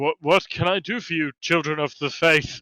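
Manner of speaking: scared, fearful voice. In a role-play scene, a guard character greets the children of the faith, scared. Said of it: "He is quite clearly also quite scared".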